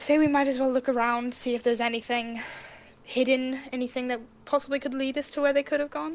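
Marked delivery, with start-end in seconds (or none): none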